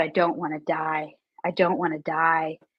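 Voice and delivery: tearful, crying pleading. Retelling crying alone on the bedroom floor: retelling own crying plea. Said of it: "on the floor of my bedroom crying".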